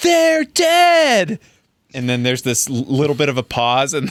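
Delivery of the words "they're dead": put-on very high shout, "dead" long and drawn out. Retelling a film scene where Anne shouts at her brother: imitating Anne shouting. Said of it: "She shouts at her brother".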